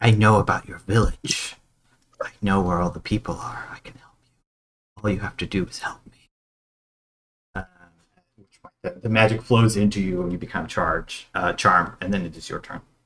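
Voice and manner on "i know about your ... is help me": leaning-in, close, secretive half-whisper. A game narrator voices a foe leaning in to the player mid-fight: half-whispering. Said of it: "they whisper to you".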